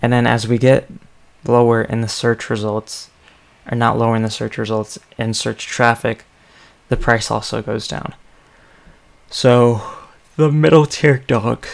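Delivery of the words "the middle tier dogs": higher-pitched words yawned out mid-sentence. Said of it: "I don't know why I'm yawning so much".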